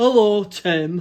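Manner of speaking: booming, very loud, hearty voice. Retelling how someone answers when asked to say hello: imitating Tim. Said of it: "He doesn't sound like that".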